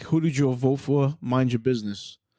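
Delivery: ordinary talk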